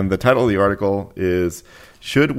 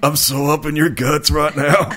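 gross, creepy, pitched-up guy voice; 7 semitones higher than usual. Picturing a neck-bearded man, the speaker voices him to a co-speaker: put-on voice of imagined neckbeard. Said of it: "neither is that voice you're using".

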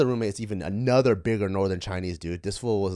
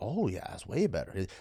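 put-on northern Chinese accent; 7 dB quieter than usual. Retelling what a man answered to his question, in a northern chinese accent. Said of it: "He talks in like a northern".

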